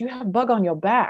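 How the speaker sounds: high, halting broken English, small lady's voice. Retelling what a little lady said after hitting an officer: imitating broken English. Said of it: "said in her broken English".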